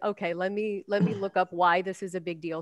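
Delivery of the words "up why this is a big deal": ordinary talk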